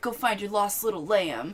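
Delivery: weird put-on southern voice. Retelling what a man told a woman whose daughter is missing, weird southern accent. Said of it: "weird southern accent".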